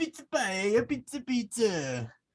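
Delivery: very high, drawn-out put-on continental European accent. Answering a request to voice the character as someone from continental europe: put-on continental european accent. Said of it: "how would his character sound if he was from continental Europe".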